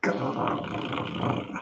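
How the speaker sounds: low, soft dog-like growl. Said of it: "the dog's growling".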